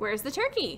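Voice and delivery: ordinary talk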